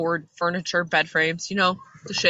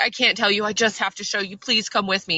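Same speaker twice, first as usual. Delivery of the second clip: mock-hysterical, frantic, begging tone; 3 semitones higher than usual. Retelling how a freaking-out woman begged a man to come with her, imitating a hysterical plea. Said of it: "she's like hysterical and she's freaking out".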